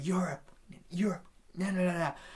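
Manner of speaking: mock heated, snapping, screaming, stumbling over words. Retelling pointing at people between songs: retelling a scream. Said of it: "And I was screaming".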